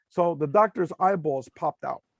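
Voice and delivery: ordinary talk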